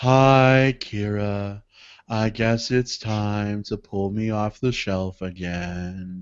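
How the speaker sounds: put-on sad character voice. Voicing the cat's toy greeting the cat at night: Sadness voice. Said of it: "She's all like".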